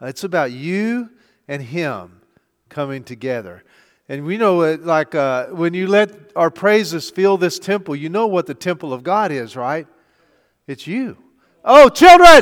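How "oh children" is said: shrill, high-pitched, very loud yell. Calling out to the children in the room: yelling at the children. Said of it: "I didn't mean to yell at y'all".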